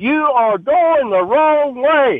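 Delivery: mock, very high-pitched, slow, drawn-out shout. Retelling how a woman in a grocery store confronted them: imitating a woman yelling. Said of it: "yells through her mask".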